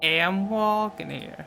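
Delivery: put-on New York accent. Reading a story aloud, joking as the bear passes: put-on new york accent. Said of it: "inner New York for you guys".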